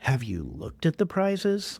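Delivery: put-on, faintly scornful, mildly disdainful swooping tone. Retelling a child's answer about the readathon prizes: imitating son's slight disdain. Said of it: "with a little bit of disdain in his voice".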